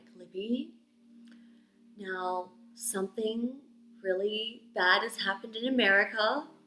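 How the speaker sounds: put-on very gentle bedside tone. Recalling being woken at her bed with bad news, quoting the woman very gently. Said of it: "she very gently was like".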